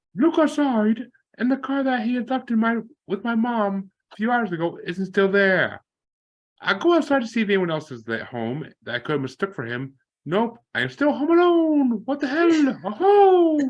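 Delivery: very high-pitched cartoon mouse voice. Reading a story aloud on the show, in a Mickey Mouse voice. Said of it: "I love your Mickey Mouse".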